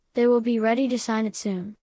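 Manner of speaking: plain reading voice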